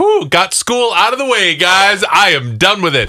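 put-on very high-pitched little-kid voice, relieved sigh. Acting out a kid who thinks school is finished: imitating a kid's relief. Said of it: "That is so Crisco to be like".

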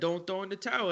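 ordinary delivery

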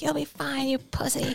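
high, screaming, dismissive voice. Retelling a friend screaming at a beginner snowboarder: imitating someone screaming. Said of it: "she's just screaming at me every lap".

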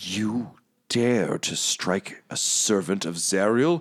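muttered, low and indistinct. Game master voicing a character in a tabletop game, muttering. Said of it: "He just mutters".

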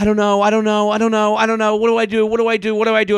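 put-on sobbing through the words, tearful. Retelling how she cried on his lap: imitating someone crying. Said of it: "while she's crying on his lap going".

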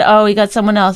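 normal talking voice

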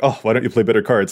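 normal talking voice

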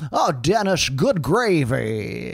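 character voice with the word gravy drawn out. Asked if others want to hear a little Mr. Wilson, speaker does Mr. Wilson impression. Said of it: "Do you want to hear a little Mr. Wilson?".

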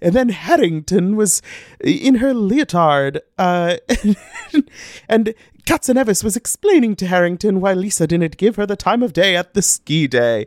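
bizarre English fairy-tale narrator accent. Reading out her notes aloud, in a bizarre Peter Rabbit accent. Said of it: "Now I'm just reading my notes in this like bizarre Peter Rabbit accent".

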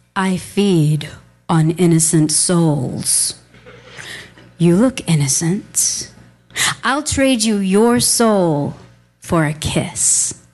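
very low, slow, drawn-out, eerie creepy voice. Telling a story, the speaker quotes a stranger who grabbed their wrist, creepy put-on voice. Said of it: "in this creepy voice".

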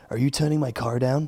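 put-on speaking in an American accent. Speaker retells Lewis's radio call to his team, as Lewis in an American accent. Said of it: "I don't know why I put an American accent on Lewis".

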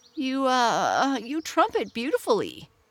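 halting stutter. A disappointed bumblebee pays a compliment, stammering. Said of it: "he stammered".

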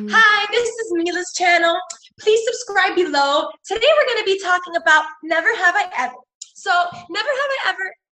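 put-on high kid vlogger voice. Describing a five-year-old niece who watches YouTube, imitate her YouTuber voice. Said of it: "she speaks like somebody on YouTube".

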